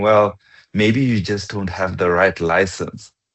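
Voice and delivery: mock smooth, very suave delivery. Retelling Devan's answer about a broken link, imitating Devan's suave voice. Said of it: "very suave voice".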